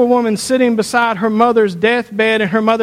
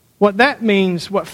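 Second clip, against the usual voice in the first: ordinary delivery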